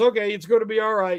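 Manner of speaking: usual speaking voice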